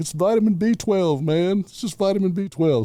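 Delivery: put-on mildly tipsy, loose. Retelling a friend's answer to cops about pills: imitating a slightly drunk voice. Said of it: "a little bit inebriated".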